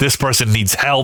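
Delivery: ordinary talk, nothing marked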